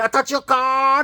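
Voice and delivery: mock shouting. Speaker retells a woman in a busy alleyway shouting at them, imitating a woman shouting. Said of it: "she's shouting at me".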